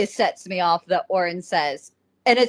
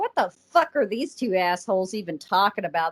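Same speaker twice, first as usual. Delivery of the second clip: usual speaking voice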